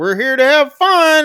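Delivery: high, loud, cheerful, chipper insistence.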